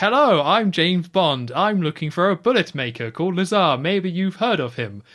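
very loud, cocky delivery. Retelling James Bond addressing a mum and two kids, imitating overconfident James Bond. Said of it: "just overconfident act of just speaking in pure English".

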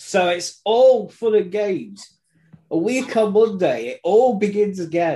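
delighted, high, gleeful voice. Telling listeners the league starts again soon: gleeful. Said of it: "that is glee you can hear in my voice".

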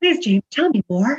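extra positive, upbeat, pitched very high. Repeating a request after being asked for more positivity: more positive. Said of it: "say that with a bit more positivity".

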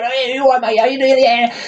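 put-on older man's voice, pitched very high. Retelling how a man of about 56 always talked, imitating him. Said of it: "he would always talk like this".

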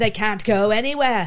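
put-on British statesman voice. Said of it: "Winston, Winston Churchill".

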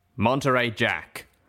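menacing, dangerous, threatening tone. A guard addresses someone by name, dangerous. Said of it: "the guard said dangerously".

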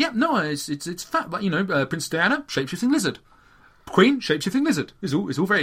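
easy, unruffled, even tone. Retelling an interview, imitating David Icke: calm David Icke impression. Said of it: "he sits there calm as you like".

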